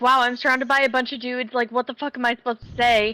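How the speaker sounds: ordinary delivery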